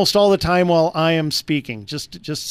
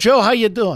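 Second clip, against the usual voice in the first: lousy, bad fake New Jersey accent; 5 semitones higher than usual. Radio host greeting a caller named Jersey Joe, in a lousy Jersey accent. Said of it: "I do a lousy Jersey accent".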